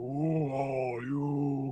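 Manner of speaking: deep, level, flat monotone drone. Describing a tentacled creature speaking in your mind, deep droning monotone voice. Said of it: "It's a deeper monodrone voice".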